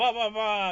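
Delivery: mock passive-aggressive yell. Retelling what church members shouted at men by a fire: imitating someone yelling back. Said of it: "passive-aggressively, you know, yelling back".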